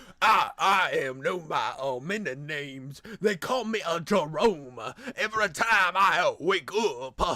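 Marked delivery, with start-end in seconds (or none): 0.2-4.8 put-on southern accent, sermonizing pulpit-style preacher delivery. Reacting to a video, a commentator repeats a character's line, southern preacher voice. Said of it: "I sound like a southern preacher".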